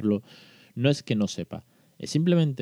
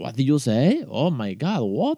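playful, over-the-top, joking sing-song delivery; 2 semitones higher, 3 dB louder than usual. Showing learners a fun way to ask someone to repeat: exaggerated joking delivery. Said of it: "En plan exagerándolo".

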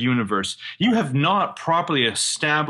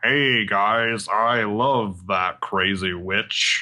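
very slow, exaggerated bad fake American accent; 5 semitones lower than usual. Parodying a foreigner's idea of Americans, exaggerated fake American accent. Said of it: "I'll do my American accent".

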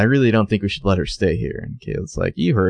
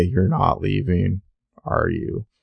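put-on robotic voice, quieter; 5 dB quieter than usual. Asked to redo a line from a reading in Toby voice, robotic Toby voice. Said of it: "my robot Toby is so robotic".

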